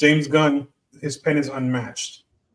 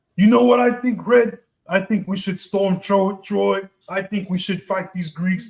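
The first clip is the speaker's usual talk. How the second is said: gruff put-on voice, a touch higher; 6 semitones higher than usual. Imitating someone who talks in his Punisher voice the whole time, gruff Punisher voice. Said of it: "it's just him doing his the Punisher accent, the Punisher voice".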